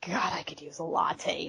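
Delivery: muttered under the breath. Retelling a comic page, muttering under her breath as Shayna. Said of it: "under her breath".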